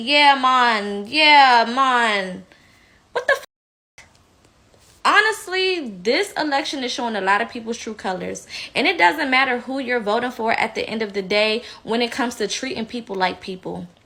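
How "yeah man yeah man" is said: slow, drawn-out put-on Jamaican accent. Mocking a politician's shifting accents, imitating Kamala's Jamaican accent. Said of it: "she wants to show her Jamaican side".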